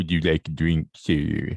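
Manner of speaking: very low, deep cartoon hound voice. Describing a dog bartender walking over with a shotgun: Droopy dog impression. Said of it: "It's actually a really good impression".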